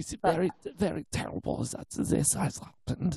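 put-on thick German accent. Quoting a woman who barely speaks german anymore, thick german accent. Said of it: "paying homage to it because that's how thick it is".

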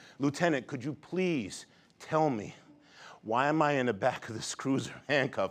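put-on, very high-pitched, begging, pleading tone. Retelling being detained and handcuffed, asking the lieutenant why: retelling begging the lieutenant. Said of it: "So now I'm begging the lieutenant".

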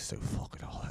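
mock under-the-breath mumbling. Retelling how someone mumbled as the waitress walked away: Mick Thomas mumbling under his breath. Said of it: "He just mumbles under his, under, underneath his breath".

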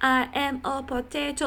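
put-on baby voice, high pitch, slow pace. Imitating people who want that photo sent, in a put-on baby voice. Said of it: "like in a baby voice".

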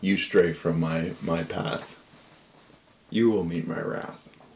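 low, hushed, soft inner voice. The voice heard these past nights speaks to the character: Hadar's voice in your head. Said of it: "But you hear the voice that you've been hearing the past few nights come into... / And he's like, / It's just a voice in your head".

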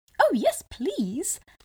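eager, keen high cry. The gingerbread man answers the fox's offer of a ride; cried out. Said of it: "cried the gingerbread man".

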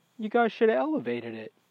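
offhand, casual delivery. Retelling what the dentist said to the others: imitating someone nonchalant.

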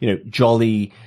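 ordinary delivery

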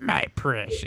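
gravelly put-on monster voice. Asked for a Sméagol-type voice on the spot: Sméagol voice. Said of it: "Can you do a Smeagly type voice right now?".

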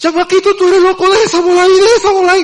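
very high, loud, shrill hollered outburst. Retelling running off from a high wall as a small kid: retelling own shouting. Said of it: "empiezo a gritar".

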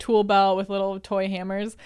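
normal talking voice

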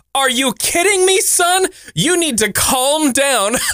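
mock, shrill, very high little-kid yell. Reading a note about a three-year-old on a hot day: imitating a child shouting. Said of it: "he shouts from the front porch".

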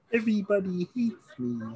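very high cartoon puppet frog voice. Comparing voices with a friend, doing a Kermit the Frog voice. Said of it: "that's not a bad Kermit".

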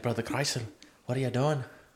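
put-on Irish accent. Joking about druids, speaker improvises a line, put-on Irish accent. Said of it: "I don't know why I went Irish for that".

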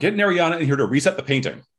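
high-pitched, loud yell. Voicing a character calling out to the assistants: yelling. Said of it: "and she yells".

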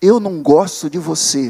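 grave, very low demonic horror-film voice. Retelling what a voice from a tape machine said, in a deep demonic horror-film voice. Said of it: "uma voz grave, demoníaca, assim, de filme de terror".

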